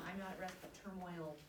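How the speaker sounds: ordinary talk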